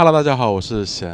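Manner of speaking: limp, very low, drained no-energy voice. Podcast guest introducing himself to listeners: weak, listless. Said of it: "有气无力的感觉".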